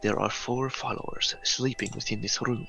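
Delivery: speaking in a whisper. Speaking in character to the others after quietly closing the door: whispering. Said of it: "and I whisper to the others".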